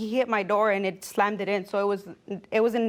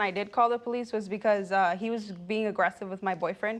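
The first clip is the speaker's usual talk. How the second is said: normal talking voice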